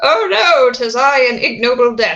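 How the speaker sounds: loud, high text-to-speech robot voice. Speaker explains that many studios use a Microsoft Sam voice, demonstrating it as a robot voice. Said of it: "but in a robot voice".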